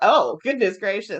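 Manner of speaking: usual speaking voice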